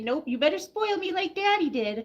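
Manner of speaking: high pet dog voice. Imagining what the dog will tell the son: voicing the dog Winchester. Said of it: "Winchester's gonna say".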